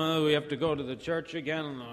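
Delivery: mock drowsy, unwilling, sleepy grumbling groan. Contrasting reluctant churchgoers with eager ones; imitating a sleepy voice. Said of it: "rubbing the sleep out of their eyes and going".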